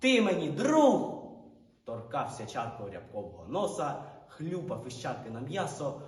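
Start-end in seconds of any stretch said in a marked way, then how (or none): 0.0-1.2 shouting, higher, louder, slower. Narrator reads Rudyi's line to the dog Riabko, shouting. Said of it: "Але Рудий кричав".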